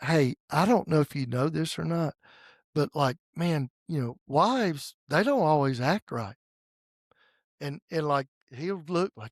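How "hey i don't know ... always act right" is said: put-on whisper. Retelling a hand-covered aside to a husband beside his wife: imitating a whisper. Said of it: "I'm just whispering to him".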